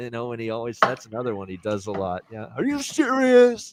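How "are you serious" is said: high-pitched commentator voice, announcer style, way up. Imitating a basketball announcer's catchphrase: Dickie V voice. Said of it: "That's my Dickie V voice there".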